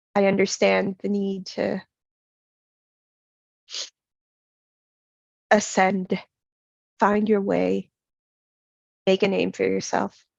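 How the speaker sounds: low, wary, confiding voice. A character confides as if spies might overhear, in a lowered voice. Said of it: "He does lower his voice and he says".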